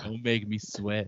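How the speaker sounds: low, soft flirtatious tone.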